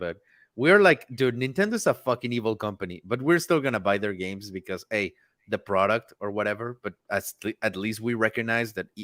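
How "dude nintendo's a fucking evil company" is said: ordinary talk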